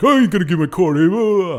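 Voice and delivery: high, loud, upset voice. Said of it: "he's like".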